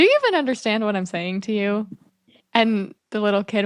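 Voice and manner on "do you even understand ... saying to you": ordinary talk, nothing marked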